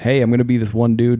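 plain

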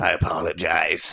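low, slow, creaky small creature voice, formal.

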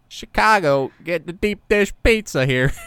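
loud attempted Chicago accent. Attempting a Chicago accent after admitting not knowing how Chicagoans sound. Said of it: "To a Chicago accent".

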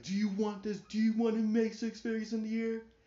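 very high-pitched, shrill, berating scream. Retelling how a man yelled at someone about a job; imitating someone yelling. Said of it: "he was just yelling like".

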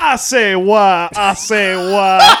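very slow, drawn-out, put-on Creole-accented voice. Debuting a comedy character for the others: Creole Yoda voice. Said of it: "Creole Yoda".

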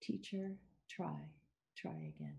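soft, hushed tone. Speaker quotes a former student's farewell words, retelling them gently. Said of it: "His voice was gentle as he said the words one more time".

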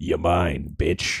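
very low, deep, rough, gruff half-whisper, close in. Narrating a scene to the listener as Octi speaks in their ear: deep gruff half-whisper. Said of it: "this deep, gruff whisper in your ear".

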